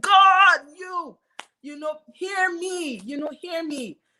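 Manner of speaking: loud, very high screaming. Recounting crying alone in the car, retelling a scream at god. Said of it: "So I'm screaming at God".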